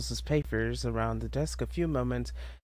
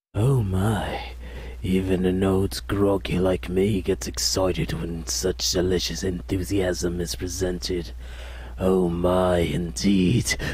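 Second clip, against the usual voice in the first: monstrous voice, lower and louder; 6 semitones lower, 5 dB louder than usual. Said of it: "give him a monster voice?".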